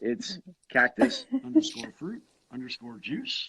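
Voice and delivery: pitch rising on juice, question-like lilt. Imitating the other speaker giving their username, Hanakawa's question-like delivery. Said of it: "you always say it like almost like a question".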